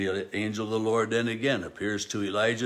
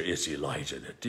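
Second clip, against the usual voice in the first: mock disdainful regal voice, lower and quieter; 7 semitones lower, 6 dB quieter than usual. Retelling the king's words about Elijah: imitating a disdainful king. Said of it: "just some disdain in his voice".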